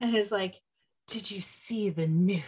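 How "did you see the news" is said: hushed, dramatic stage whisper. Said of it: "like, dramatically".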